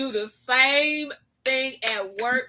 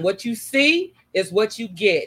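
usual speaking voice

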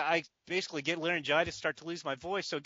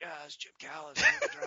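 put-on raspy voice. Retelling answering the phone while sick: imitating his own raspy voice. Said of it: "to rasp out".

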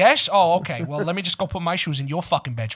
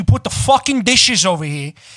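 loud, playful put-on New York accent; 2 semitones higher, 7 dB louder than usual. Ranting about dishes left all over the place, New York accent. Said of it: "I'll just go into that New York accent".

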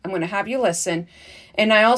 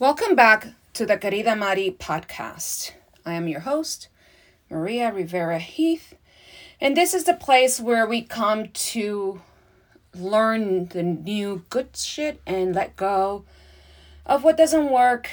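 slightly breathless, a little winded. Podcast host opens the show just after running up the stairs, a little out of breath. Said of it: "that's why I'm a little bit out of breath".

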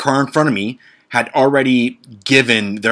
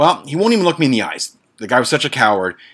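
ordinary talk, nothing marked

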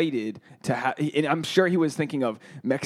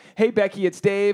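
put-on panicky voice, higher pitch; 6 semitones higher, 3 dB louder than usual. Retelling a voicemail a girl left, then hung up: imitating a panicked caller. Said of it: "and she started panicking".

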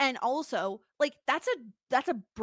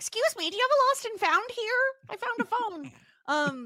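very high-pitched, put-on Canadian accent; 10 semitones higher, 3 dB louder than usual. Imagining what people in a small town will say, canadian accent. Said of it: "I don't know why that's my Canadian voice".

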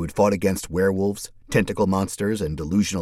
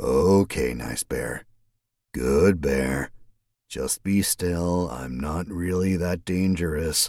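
steady, calm, soothing, deep, slow voice; 3 semitones lower than usual. A man speaks to a bear, trying to keep it still, in a calm, deep voice. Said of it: "speaking in calm tones".

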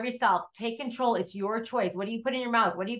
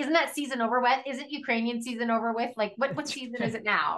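ordinary delivery

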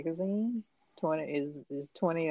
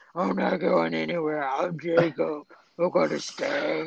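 slow, drawn-out, echoing voice; 4 dB louder than usual. Mocking an animated wolf's telepathic line: imitating an echoing voice. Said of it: "this echo voice like".

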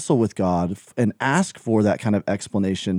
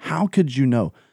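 acted, mock-angry delivery; 4 semitones higher than usual. Retelling his own question to the Lord, retelling an angry retort. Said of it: "In rebuttal and anger toward him".

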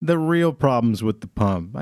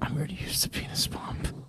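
breathy, hushed ASMR whisper, very quiet; 3 semitones higher, 12 dB quieter than usual. Teasing the other speaker about whispering into the mic, imitating someone's whisper. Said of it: "It's you whispering".

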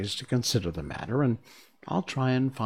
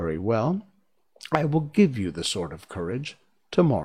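usual speaking voice

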